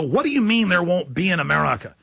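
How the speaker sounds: normal talking voice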